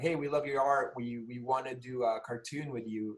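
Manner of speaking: ordinary talk, nothing marked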